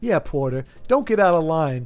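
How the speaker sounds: put-on smug tone. Quoting a movie character about porter: imitating a smug character. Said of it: "really smug schmuck".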